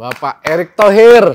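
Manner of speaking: slow, loud, grand showman's announcer call.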